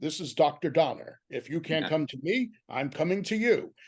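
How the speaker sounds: loud, booming voice. Retelling a surprise phone call from the director: booming voice as Richard Donner. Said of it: "from a booming voice saying".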